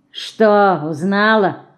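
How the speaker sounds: mocking, taunting, scoffing. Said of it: "насмешливо спросил он".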